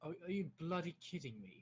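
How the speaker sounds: extremely strong, exaggerated British accent. Reacting in disbelief while gaming: ultra British accent. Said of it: "You sounded ultra British when you said that".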